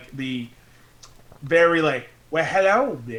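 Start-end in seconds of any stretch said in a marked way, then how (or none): 2.3-3.2 put-on Southern accent. Comparing accents with friends, a speaker shows a Southern accent. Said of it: "my southern mostly go into like".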